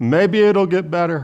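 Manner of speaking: put-on high grandma voice. Illustrating what optimism says about a situation: imitating his grandmother. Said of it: "my best imitation of my grandmother".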